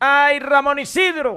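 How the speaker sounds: hurt, wounded, high-pitched complaining tone.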